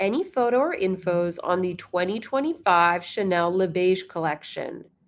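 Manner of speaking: usual speaking voice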